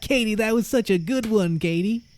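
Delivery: put-on very high-pitched, irritating, grating American accent. Quoting an American in a Super Bowl clip reacting to a joke: American accent impression. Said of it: "I saw some clips of Americans".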